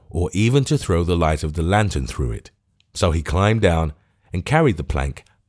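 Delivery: ordinary delivery, nothing marked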